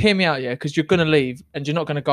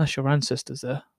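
put-on dead serious, quieter; 6 dB quieter than usual. Acting out dad turning to you during the film every time, imitating dad being dead serious. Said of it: "Dead serious".

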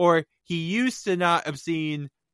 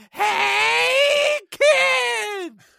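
"hey" very high, creaky, rough, drawn out; 4 dB louder than usual. Introducing the podcast and doing a cartoon character impression: Binky impression. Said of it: "do my Binky impression".

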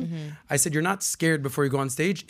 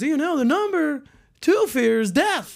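loud, punchy, very high-pitched comic voice; 12 semitones higher, 5 dB louder than usual. Retelling a comedy bit about the fear of public speaking: Jerry Seinfeld impression. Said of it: "I'm doing my Seinfeld here".

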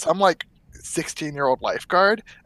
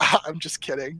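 put-on valley girl voice; 4 dB quieter than usual. Retelling what a boss said after a scare, imitating a boss's valley girl voice. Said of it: "valley girl kinda thing".

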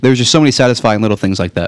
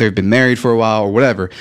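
plain

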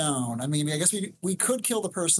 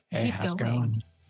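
seductive, sexy voice, lower; 6 semitones lower than usual. Answering a request from the others to talk in a sexy voice: sexy voice. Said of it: "Sexy voice".

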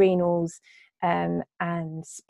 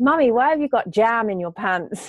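put-on loud, high-pitched little-boy voice, blurted out; 5 semitones higher, 6 dB louder than usual. Retelling what a friend's three-year-old boy asked her in the bathroom: imitating a small boy saying it loudly. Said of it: "he said really loudly".

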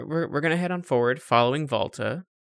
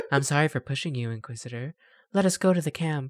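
deadpan, affectless, flat delivery with no feeling; 3 dB quieter than usual. Acting out a game character's apology, flat Liara-like monotone. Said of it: "She literally sounds like Liara, like some monotone".

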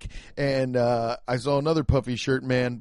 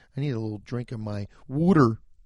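put-on, fake Philadelphia accent; 2 semitones lower than usual. Showing how they say it in Philly: put-on Philly accent. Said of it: "That's how they say it in Philly".

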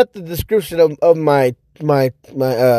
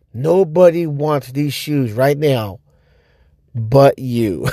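put-on deadpan delivery, lower; 3 semitones lower than usual. Retelling a sneakerhead's remark about the shoes, imitating a deadpan delivery. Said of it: "He said it with such a straight face".

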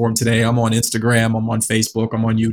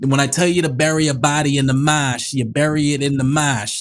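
exaggerated thick Boston accent, higher; 4 semitones higher than usual. Answering why they don't sound like they're from Boston: exaggerated Boston accent. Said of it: "You mean that accent?".

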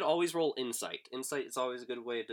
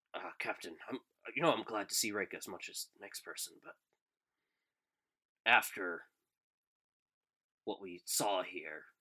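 hushed whisper, lower and quieter; 4 semitones lower, 5 dB quieter than usual. Voicing a companion leaning close to the captain: whispering. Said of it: "he leans in close and he whispers to you".

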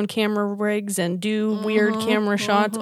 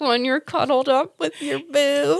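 acted, thinly veiled irritation, subtle anger, pitched up; 6 semitones higher than usual. Imitating the other speaker's earlier line: imitating subtle anger. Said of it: "the subtle anger in her voice".

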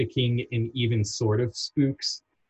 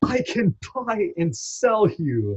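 mock over-the-top hammy scream, very high; 9 semitones higher than usual. Describing a contrast between two voice performances, imitating Thurop Van Orman screaming, going full ham. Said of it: "going full ham just screaming".

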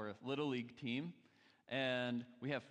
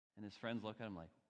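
ordinary delivery

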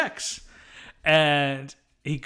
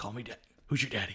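mock seductive voice, lower and quieter; 5 semitones lower, 10 dB quieter than usual. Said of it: "the same intonation of".

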